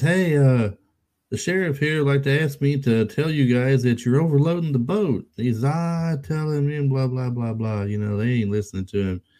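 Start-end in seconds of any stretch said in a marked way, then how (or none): 0.0-5.3 loud, pitched-up yell. Retelling a shark movie scene, the speaker quotes a man yelling at the guys: imitating someone yelling. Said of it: "And he's yelling at the guys in there".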